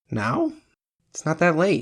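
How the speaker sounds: wary, doubting and suspicious, high swooping pitch. She questions the narrator's wish to go home, suspicious. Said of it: "she asked suspiciously".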